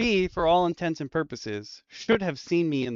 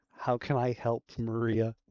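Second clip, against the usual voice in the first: secretive, low, hushed half-whisper under the breath; 4 semitones lower, 7 dB quieter than usual. In a role-play scene, a character looks at a watch and asks, half-whispering. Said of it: "I'm gonna whisper".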